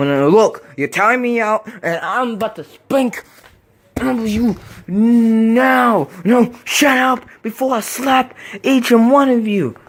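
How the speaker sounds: high, slow, stretched-out unhinged raving puppet voice. A puppet character talks back to the coach and others, acting like a maniac. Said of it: "I am a maniac. I'm such a maniac. / but you want to act like a maniac".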